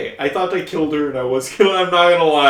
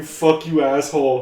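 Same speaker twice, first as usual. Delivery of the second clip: plain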